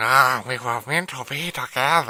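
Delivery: put-on creepy way of talking. Imitating a character who keeps pursuing a woman: imitating a creepy character's way of talking. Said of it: "Why are you talking like that?".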